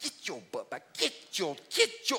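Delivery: mock scolding, grandfather voice. Imitating how grandpa would yell at the stray sheep: imitating grandpa scolding a sheep. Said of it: "he'd been like".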